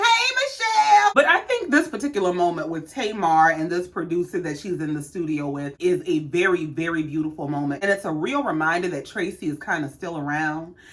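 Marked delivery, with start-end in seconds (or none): 0.0-1.1 screaming high and slow. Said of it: "and screamed".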